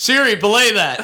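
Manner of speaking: loud high-pitched yell. Recalling answering Joel's Siri timer request while he cooked, retelling a shout. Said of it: "And I would shout over".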